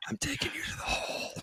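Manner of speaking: soft, hushed whisper. Retelling how tall Wimby's talking sounded by the time it reached the speaker: imitating Wimby's soft whisper. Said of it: "just a soft whisper".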